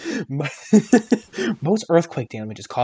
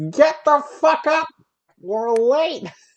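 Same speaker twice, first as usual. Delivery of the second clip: very high, shrill, hollered yelling; 12 semitones higher, 4 dB louder than usual. Acting out a man yelling at a house from a train stopped outside, imitating someone yelling. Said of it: "he yells at your house like".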